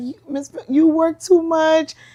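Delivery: high, slow scolding voice, worried. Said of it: "she's like".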